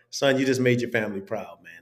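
ordinary talk

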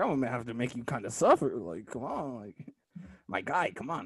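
soft, hushed crackhead-style street voice. Retelling a game scene, the speaker quotes Yasuke in a crackhead voice. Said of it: "I gave him the crackhead voice".

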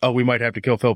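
mock casual, nonchalant tone. Retelling a movie character's aside on the phone: imitating someone nonchalant. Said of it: "Just moves on all nonchalant about it".

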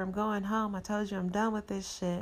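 ordinary talk, nothing marked

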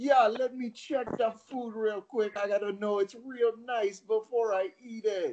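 put-on Jamaican accent, pitched very high. Retelling how a man stayed in character while paying, in a Jamaican accent. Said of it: "I'm going to do a Jamaican accent".

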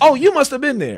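acted, very high, loud sarcastic jab. Retelling the reply in the story's resolution, mock-sarcastic. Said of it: "And he's being sarcastic".

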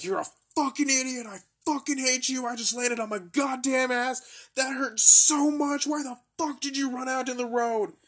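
mock, very high, shrill, furious screamed tirade. Speaker acts out his buddy yelling at him after a tackle, retelling a yell. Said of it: "He's yelling at me".

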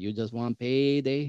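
put-on Mexican accent with words dragged out. Retelling Canelo mocking a challenger at a post-fight press conference, Canelo impression. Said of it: "He's doing it like the Mexican voice".

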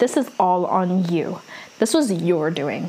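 plain

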